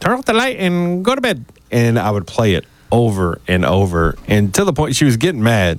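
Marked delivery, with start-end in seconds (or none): 0.0-1.4 high voice run through a voice changer. Retelling Mom's recorded line after changing it on a toy recorder: imitating a voice-changed recording. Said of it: "recorded her on the talk boy and changed her voice".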